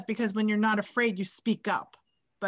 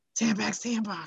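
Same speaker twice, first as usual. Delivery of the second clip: fake seductive voice. Imagining having a new voice, the speaker tries a sexy Linda Vicaro voice. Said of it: "what if I have like a sexy voice now?".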